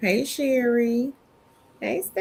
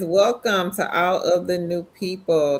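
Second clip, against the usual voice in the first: ordinary talk, nothing marked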